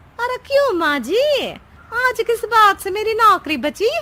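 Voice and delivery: shrill, very high, very loud chatty voice. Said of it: "[name] खाना बनाने लगती है और सास वहीं पास में बैठ जाती है। / [name] खाना बनाने लगती है और सास वहीं पास में बैठ जाती है। / तेरा नाम टैप रिकॉर्डर सही रखा है मैंने। तेरी एक ही बात को रिपीट मोड पर चलाने स".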